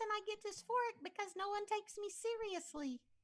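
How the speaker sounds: squeaky, very high-pitched talking voice. Explaining voice dysphoria with an example, in a high squeaky voice. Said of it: "squeaky talking voice like this".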